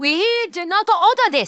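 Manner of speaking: put-on, attempted Japanese accent. Telling a story about Japanese diners at a Mexican restaurant, speaker tries a put-on Japanese accent. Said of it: "let me see if I can do this accent".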